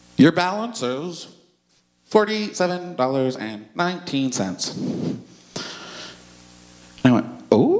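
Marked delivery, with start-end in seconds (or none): 0.2-5.2 put-on automated, recorded phone machine voice. Retelling calling to check a balance, in the automated phone voice. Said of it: "the little automated voice of doom said".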